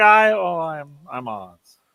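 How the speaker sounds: stammering, flustered, caught-out put-on wizard voice. Voicing the man pulled out from behind the curtain: stammering Wizard of Oz. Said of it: "he's like".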